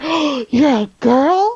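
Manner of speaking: slow, loud, shocked gasp.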